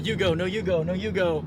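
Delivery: ordinary delivery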